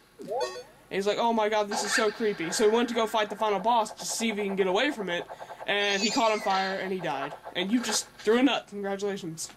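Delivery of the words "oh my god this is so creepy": usual speaking voice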